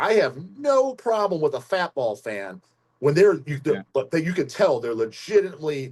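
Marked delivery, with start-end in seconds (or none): none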